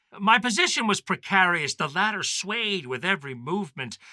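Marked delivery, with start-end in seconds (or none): none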